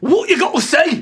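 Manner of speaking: put-on northern English accent. Voicing the rider who threw a spear at the party's feet: northern English accent. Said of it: "make it a northern English".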